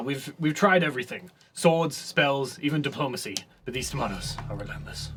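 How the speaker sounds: steady, unflappable, stoic guard captain voice. Voicing a guard captain keeping order amid chaos: stoic guard captain voice. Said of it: "a stoic, uh, red guard".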